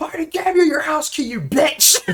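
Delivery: play-acted, very high-pitched, angry shouting in a row. Retelling a man yelling at a woman from his car window, retelling a man yelling. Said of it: "Now they're yelling at one another".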